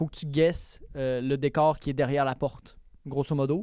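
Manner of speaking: ordinary talk, nothing marked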